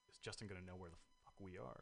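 hushed, very quiet whisper. Wondering aloud whether a latecomer will know where they are: whispering. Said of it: "I don't know why I just whispered that".

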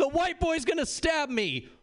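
mock very high-pitched drunken screaming. Retelling a party story, quoting a drunk girl: imitating a drunk girl screaming. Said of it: "the drunk girl screams".

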